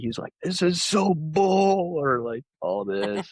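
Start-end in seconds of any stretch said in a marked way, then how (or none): 0.4-1.9 very high, slow yell, "bull" drawn out. Retelling how Zach yelled at the TV while playing: imitating Zach yelling. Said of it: "he's yelling at the T V".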